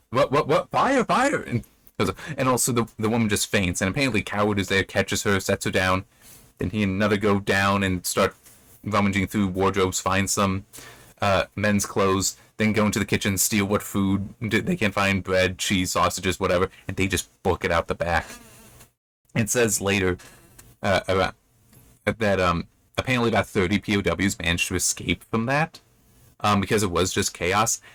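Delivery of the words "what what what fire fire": alarmed, urgent cry. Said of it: "the man is like".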